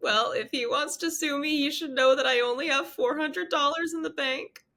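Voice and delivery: crying while talking. Retelling what she said to an officer while crying: imitating her own past crying. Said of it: "And so I'm crying".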